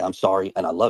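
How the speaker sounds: ordinary delivery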